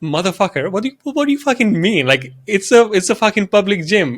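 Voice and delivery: pissed-off, angry, cursing rant. Telling a story about an argument with a man, quoting his own reply: retelling own angry outburst. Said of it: "I got pissed off because of his attitude".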